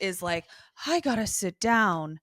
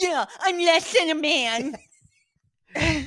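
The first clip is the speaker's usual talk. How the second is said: sniveling whine, high-pitched and very slowly dragged; 9 semitones higher, 4 dB louder than usual. Asked to redo a quoted line in the sniveling Darla voice. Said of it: "Do that in the sniveling Darla voice".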